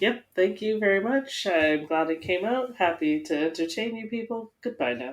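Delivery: put-on unruffled, relaxed, calm, cool, easy delivery. Retelling his radio words at the end of the race: imitating a calm, cool voice. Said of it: "He was just so calm and cool".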